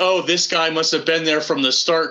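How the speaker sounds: normal talking voice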